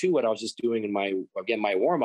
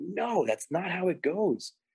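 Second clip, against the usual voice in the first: acted-out, reenacted yell, pitched higher; 7 semitones higher, 3 dB quieter than usual. Recounting a long lesson where he yelled at the speaker, retelling someone yelling. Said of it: "And he's like yelling at me".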